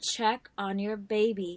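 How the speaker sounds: raspy film-star voice. Retelling a ghostly warning heard while typing: Lauren Bacall raspy voice. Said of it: "the raspy voice said again".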